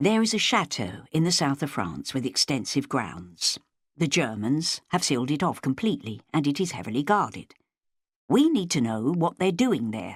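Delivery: ordinary delivery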